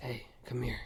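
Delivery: soft, hushed whisper the whole way through. Acting out how a man called him over the whole time: whispered. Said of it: "he's whispering like this the whole time".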